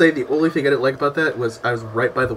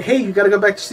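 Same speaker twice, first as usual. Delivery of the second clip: usual speaking voice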